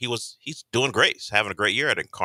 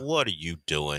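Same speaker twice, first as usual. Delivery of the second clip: put-on doubtful skeptical tone, lower and quieter; 3 semitones lower, 5 dB quieter than usual. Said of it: "you can tell in his tone".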